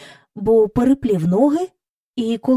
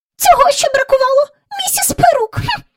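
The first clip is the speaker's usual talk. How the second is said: shrill, thin, squeaky, very high, offended, indignant; 4 dB louder than usual. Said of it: "тонким пискливим голосом".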